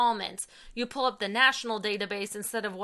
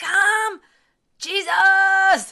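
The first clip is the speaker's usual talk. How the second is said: yell, much higher-pitched and much louder; 10 semitones higher, 12 dB louder than usual. Describing someone who is enthusiastic to pray, imitating him yelling. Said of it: "And so he'll yell".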